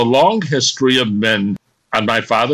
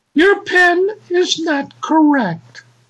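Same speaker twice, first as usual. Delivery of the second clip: recorded female phone voice, higher pitch. Retelling a call to the phone company: automated female voice. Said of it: "this automated female voice".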